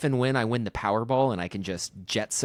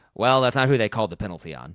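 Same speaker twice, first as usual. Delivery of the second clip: put-on dismissive, condescending, fast talking-down tone; 5 dB louder than usual. Recalling what a broadcaster said once a player's mic was cut, mock-condescending. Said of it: "he said it very like condescendingly too".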